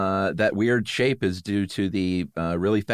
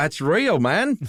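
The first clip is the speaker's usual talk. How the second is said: very high, terrible fake Australian accent; 9 semitones higher, 3 dB louder than usual. Retelling a volunteer's reply, in a bad Australian accent. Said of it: "That was the worst Aussie accent I've ever done".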